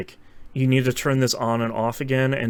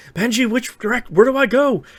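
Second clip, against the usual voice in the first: scream, much higher and louder; 11 semitones higher, 5 dB louder than usual. Recounting a scene where he calls Benji on the phone, imitating Tom Cruise screaming. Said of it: "Tom Cruise is screaming on the phone".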